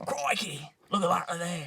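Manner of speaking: sing-song exclamation, pitch swooping wide. Answering a request to do a Steve Irwin impression: Steve Irwin impression. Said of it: "give him your best Steve Irwin impression".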